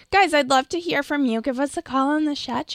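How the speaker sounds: syrupy sweet, high pleading tone. Co-host inviting listeners to call in on the chat, in sweet pleading. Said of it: "sweet pleading".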